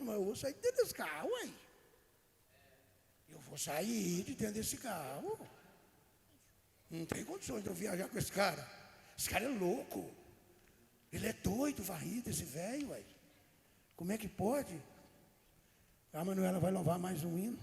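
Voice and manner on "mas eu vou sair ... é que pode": soft, put-on voice of god, half to oneself. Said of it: "E Deus tá de carro olhando".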